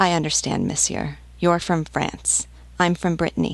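plain

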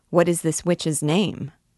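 ordinary delivery, nothing marked

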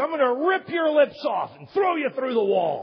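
high, loud threatening yell.

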